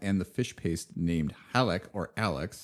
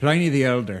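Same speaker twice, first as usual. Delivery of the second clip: put-on Irish accent, higher and louder; 6 semitones higher, 10 dB louder than usual. Imitating a Roman culture professor from Northern Ireland: imitating a professor's Irish accent. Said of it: "an Irish accent".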